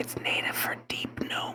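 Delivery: barely audible, very quiet, breathy hushed whisper. A character leans in to tell the player about a language, whispering. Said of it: "in and whispers".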